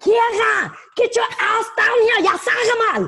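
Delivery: very high, scary, scolding mom voice. Asked before wrapping up to do her mom's impression: imitating scary German mother. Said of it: "you got to do your mom's impression".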